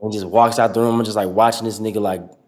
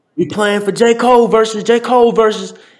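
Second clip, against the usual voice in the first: shrill, excited, very high, loud scream; 12 semitones higher, 7 dB louder than usual. Retelling playing two k games against everybody: retelling own screaming. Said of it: "So I just started screaming".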